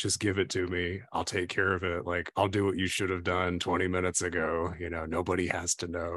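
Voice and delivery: hushed whisper. Retelling how the man in charge below deck spoke to another man, retelling a whisper. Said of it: "kind of whispers to him".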